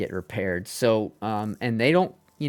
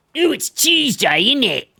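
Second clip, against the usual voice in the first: very high, swooping, exaggerated cartoon Cockney accent; 7 dB louder than usual. Mocking how cartoons portray british people, in a cartoonish cockney accent. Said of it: "that old fucking Cockney accent".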